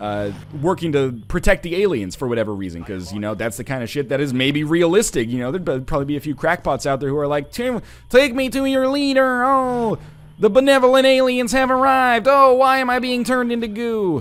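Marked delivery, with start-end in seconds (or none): 7.5-14.2 very high, loud insectoid mantis alien voice. Streamer acts out imagined people welcoming aliens, mantis alien voice. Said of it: "my cat freaked out with my mantis alien voice".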